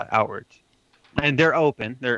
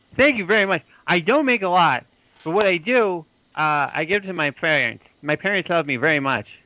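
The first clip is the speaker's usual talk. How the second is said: put-on high, slow, small young boy voice; 6 semitones higher, 3 dB louder than usual. Voicing a little boy who reports finishing his errands: little boy voice. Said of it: "what is your name, little boy?".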